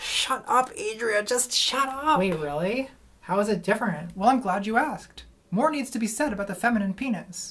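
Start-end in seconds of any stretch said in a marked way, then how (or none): 0.0-2.2 fed-up, exasperated, drawn-out sigh. In a scene, a character tells Adria to shut up, exasperated. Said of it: "[EXASPERATED SIGH]".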